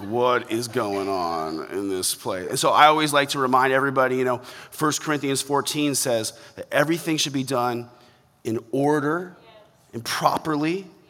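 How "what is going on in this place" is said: slow, nervous, uneasy, bewildered voice. Imitating churchgoers who get nervous during this kind of sermon: imitating nervous churchgoers. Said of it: "real nervous during this type of sermon".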